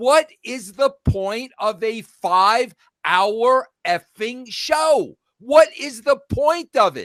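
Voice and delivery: fed-up, pissed-off, angry delivery. Speaking to Jeff about last night's show, angry. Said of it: "I'm I'm pissed now".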